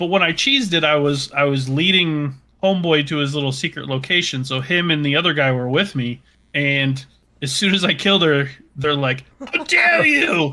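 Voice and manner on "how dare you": play-acted very high, outraged angry yell. Retelling how game characters reacted to a kill: imitating NPCs yelling. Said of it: "they just started yelling at me".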